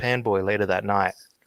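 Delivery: plain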